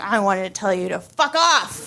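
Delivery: put-on drunk, drugged, tipsy-sounding voice. Retelling pointing at the doctor while on drugs, retelling sounding kind of drunk. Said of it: "I sound kind of drunk".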